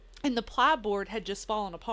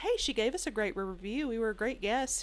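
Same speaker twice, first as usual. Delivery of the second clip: ordinary delivery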